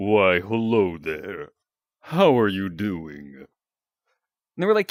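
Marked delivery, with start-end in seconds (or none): 0.0-3.4 very low, deep, slow, drawn-out devil voice. Retelling asking neighbors whether they heard this voice: Lucifer voice. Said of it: "did one of the voices sound like this?".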